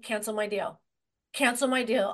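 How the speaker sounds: normal talking voice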